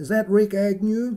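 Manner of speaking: put-on American accent. Retelling a 2:30 a.m. phone call from Steve Fossett, in an American accent. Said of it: "This is supposed to be American accent".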